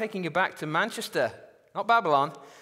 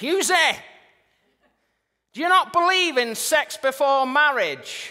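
put-on top-of-the-voice yell, loud and high; 8 semitones higher, 5 dB louder than usual. Retelling what a pupil said in a school corridor: imitating Curtis shouting. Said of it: "at the top of his voice".

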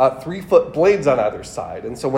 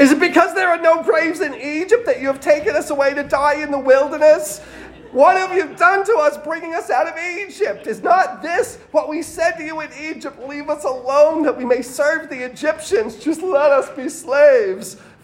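put-on very high, frantic, hysterical old-lady voice; 12 semitones higher than usual. Reading the Israelites' complaint to Moses in his grandmother's voice, imitating hysterical grandmother. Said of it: "my grandmother's voice when she got really hysterical".

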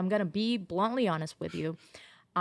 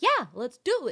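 mock lively, animated delivery, pitched up; 6 semitones higher than usual. Retelling how the producer answered a request: animated imitation of Alana. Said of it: "Very animated".

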